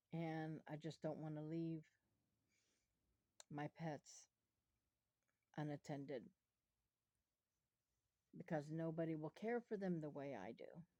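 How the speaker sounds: holding back tears, fighting emotion. Talking in a video about the illnesses, holding back tears. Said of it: "I'm trying not to get emotional right now".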